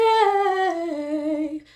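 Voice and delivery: light head voice. Showing head voice after chest voice: lighter head voice. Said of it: "head voice, which is lighter".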